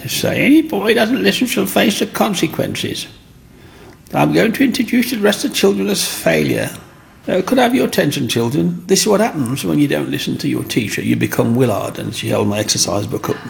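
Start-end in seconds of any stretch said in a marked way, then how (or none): 0.5-12.0 very high, grating, rough schoolteacher voice. Recalling a teacher addressing the children in class, in a horrible teacher voice. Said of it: "used to have a horrible voice".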